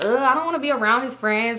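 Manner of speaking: normal talking voice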